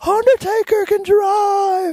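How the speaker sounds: very high put-on voice with "drive" drawn out. Recalling how he talked about the Undertaker, in Paul Bearer voice. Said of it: "in his Paul Bearer voice".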